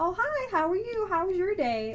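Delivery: put-on, high-pitched baby-talk voice. Mocking how people naturally talk to them, in a higher-pitched voice. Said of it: "talking to them in a higher pitched voice".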